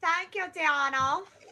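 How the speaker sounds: high, put-on English accent. Thanking a viewer for a super sticker on request: English accent. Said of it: "can you say thank you with an English accent".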